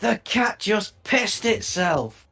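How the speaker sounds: very high, very slow, drawn-out booming magic voice. Using a spell to announce to the tavern: booming magical voice. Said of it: "use my thaumaturgy with booming voice and go".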